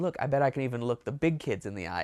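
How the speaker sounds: normal talking voice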